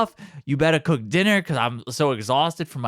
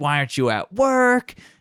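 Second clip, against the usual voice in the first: put-on, indignant, angry yelling. Retelling a scene where one character yells at another: imitating someone yelling. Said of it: "he's yelling at Bob".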